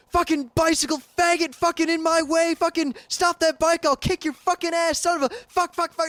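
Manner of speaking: mock relentless screaming rant, high and nonstop. Retelling a driver chasing the speaker's bike: imitating a driver yelling. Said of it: "he's yelling".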